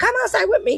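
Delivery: put-on broken English. Retelling what a lady with a melting car said: imitating broken english. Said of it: "in her broken English".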